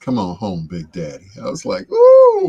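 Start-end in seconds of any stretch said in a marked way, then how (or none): 0.0-1.3 put-on soft, smooth, seductive tone. Praising an actress's first role, speaker quotes her line in that smooth voice. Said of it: "she put on that that's that smooth voice".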